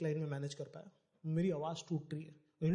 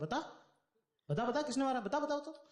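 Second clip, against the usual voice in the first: play-acted, insistent, pressing, pitched-up nagging tone; 8 semitones higher than usual. Speaker retells his mother questioning him, imitating her insistent questioning. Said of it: "ये उंगली का निशान कैसे हो रहे तेरे?".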